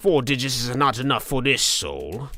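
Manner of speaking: put-on loose British accent, high-pitched and loud. Narrator voicing a game character talking to himself, in [name]'s loose British accent. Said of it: "with a sort of loosely British accent".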